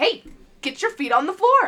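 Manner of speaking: loud, stern, firm scolding voice. Showing the voice used on the kids at school, in a mom voice. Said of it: "I use my mom voice".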